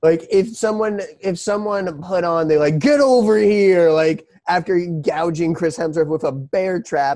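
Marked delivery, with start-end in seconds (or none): 2.8-3.9 loud, raised, pitched-up battle cry. Quoting the bear trap killer's taunt: Scorpion voice. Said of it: "like he's Scorpion from Mortal Kombat".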